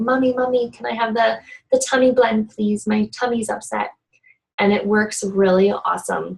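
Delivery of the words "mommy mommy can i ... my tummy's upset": put-on child's voice. Retelling how the kids come asking for an oil: imitating the kids asking. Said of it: "my kids will come to me sometime and be like".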